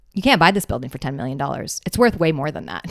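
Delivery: mock muttering under the breath. Retelling a friend's quiet reply: imitating someone muttering under breath. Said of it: "kinda says under her breath".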